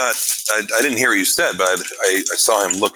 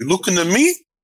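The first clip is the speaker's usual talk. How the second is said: very high pitched delivery; 10 semitones higher than usual. Teasing a player about their message, Robert De Niro impression. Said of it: "a little like the Robert De Niro speech in Taxi Driver".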